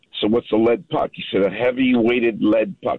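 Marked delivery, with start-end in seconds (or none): 1.4-3.0 put-on speaking with a French accent. Retelling what a hockey school pro said about pucks: Henri Richard French accent. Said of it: "with a French accent".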